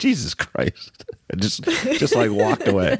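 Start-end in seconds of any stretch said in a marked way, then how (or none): 0.0-1.1 mock muttered, low mumbling delivery. Retelling the coach's reaction before he walked away, imitating someone muttering. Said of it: "he just muttered like".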